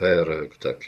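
ordinary delivery, nothing marked

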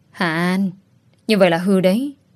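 ordinary delivery

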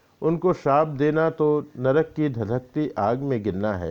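ordinary delivery

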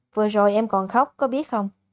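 ordinary delivery, nothing marked

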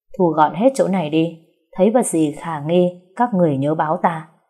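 ordinary talk

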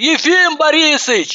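high, hollering, yelling call. Ivanova calling out of a window to Yefim Borisovich, yelling. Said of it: "завопила Иванова".

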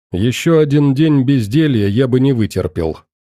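ordinary delivery, nothing marked

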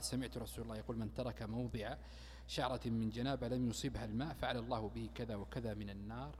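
normal talking voice

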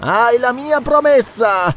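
mocking, sardonic shout, very high and drawn out. Narrator reads Zarono answering Valenso, shouted with a sardonic smile. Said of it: "gridò Zarono con un sorriso sardonico".

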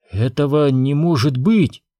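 hushed whisper. Reading the queen's reply after Obi-Wan's warning: whispered. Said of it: "прошептала королева".

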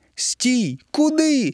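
very high, screeching shriek. A tomato watches a mermaid escape into a stream: screeching. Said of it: "заверещав він".

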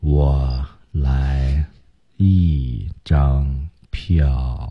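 low, very slow, lordly boss drawl.

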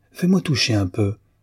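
plain reading voice

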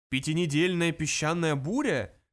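mocking, scornful tone. A computer responds to Fuk's comparison by asking back: mocking question. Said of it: "насмешливо переспросил компьютер".

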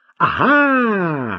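gleeful, delighted, drawn-out, high Ага. Narrator reads Lucien reacting to Marc's answer, gleeful. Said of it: "обрадовался Люсьен".

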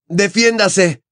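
very high-pitched, full-volume yell. Mid-duel, a young wizard yells at the man who deflected his spell; shouted. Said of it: "Le gritó Harry".

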